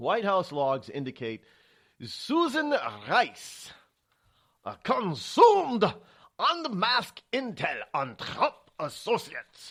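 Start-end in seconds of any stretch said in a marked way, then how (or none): 2.0-9.7 very bad fake German accent, loud and slow. Reading a news headline aloud: very bad German accent. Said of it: "it's my very bad German accent there".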